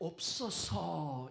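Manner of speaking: stressed 없어서, drawn out very slowly.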